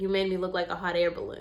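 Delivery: flat deadpan delivery. Retelling what a salon client said after seeing her hair: imitating a straight-faced remark. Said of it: "she said that so straight face".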